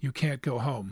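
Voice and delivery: said quietly in a hushed voice. A woman answers Karen, who asks for her clothes to go home; said quietly. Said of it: "the woman said quietly".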